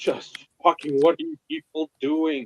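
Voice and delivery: small, contained, mild yell. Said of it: "I fucking scream".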